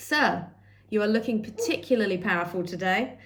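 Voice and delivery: ordinary delivery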